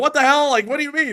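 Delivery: high, loud, bewildered, disbelieving yelp.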